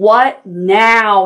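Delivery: grouchy bear growl, loud and drawn out. Narrator reads the bear, woken from sleep by a knock, growling. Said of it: "He growled".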